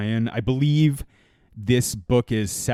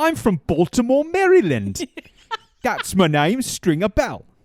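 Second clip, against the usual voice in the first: put-on English accent with much higher pitch; 10 semitones higher, 4 dB louder than usual. Joking about Idris Elba playing Stringer Bell, the speaker does an Idris Elba English accent. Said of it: "Is he posh English".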